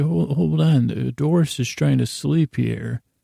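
ordinary talk, nothing marked

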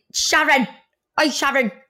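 Mancunian accent, called out. Imitating how people in Manchester would call the name: Manchester accent. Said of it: "in Manchester, you'd be like".

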